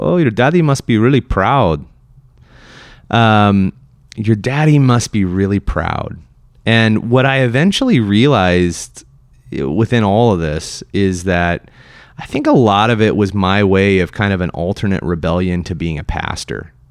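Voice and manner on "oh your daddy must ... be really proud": put-on heavy Puerto Rican accent in English. Retelling what a man said after hearing of the speaker's therapy accomplishment, strong Puerto Rican accent. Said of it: "with his very strong Puerto Rican accent".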